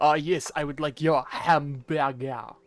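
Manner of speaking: slow French accent putting on an English accent. Showing what a Frenchman impersonating an Englishman sounds like: Frenchman impersonating an Englishman. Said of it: "what a Frenchman impersonating an Englishman would be like".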